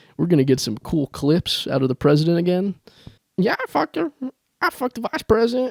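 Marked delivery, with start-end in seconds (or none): 3.4-5.7 put-on ghoulish character voice, higher pitch. Joking about a new president, doing a Beetlejuice impression. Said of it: "That's my Beetlejuice in-, uh, impression".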